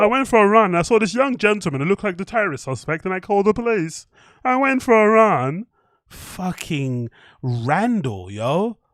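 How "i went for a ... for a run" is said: mocking, pitched-up tattletale voice. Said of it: "Let's see if he's got a snitch voice".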